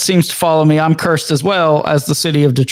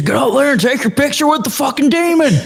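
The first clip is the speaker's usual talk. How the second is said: put-on very high, boozy, drunken hollering; 9 semitones higher than usual. Imitating a drunk dad yelling at his kid: imitating a drunk dad yelling. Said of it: "drunk dads, like, yelling at their kids".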